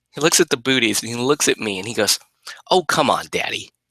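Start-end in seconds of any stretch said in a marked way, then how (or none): 2.7-3.7 put-on sarcastic little-kid voice. Retelling how the two-year-old son reacted to the booties: imitating a sarcastic toddler. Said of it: "that kind of sarcasm from a, a two-year-old kid".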